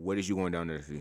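deep voice. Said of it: "my voice about to get deep again".

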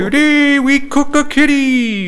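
high-pitched, loud, slowed delivery. Naming favorite Muppet characters, then doing the Swedish Chef voice. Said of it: "and the Swedish Chef".

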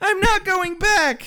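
put-on high, slow girl's voice. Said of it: "Kathy says".

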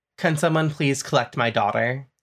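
cool, very calm, composed voice calling from afar. Voicing a father calling from a distance for his daughter: very calm voice. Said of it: "a very calm voice from a distance away says".

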